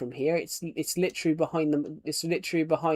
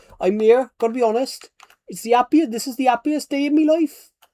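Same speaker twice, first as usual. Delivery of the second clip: very loud, high, shrill, grumpy Welsh accent; 9 semitones higher, 10 dB louder than usual. Showing how Welsh people sound pissed off even when happy, put-on grumpy Welsh accent. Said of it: "they always sound pissed off".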